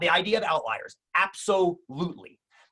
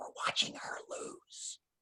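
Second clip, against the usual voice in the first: breathy, hushed whisper, barely voiced. Retelling a stranger's reply at a slot machine, imitating a whisper. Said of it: "we're whispering now".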